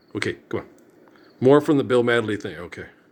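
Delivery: normal talking voice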